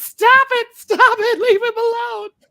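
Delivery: frantic, very high, loud shrieking yell.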